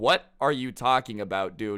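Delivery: ordinary delivery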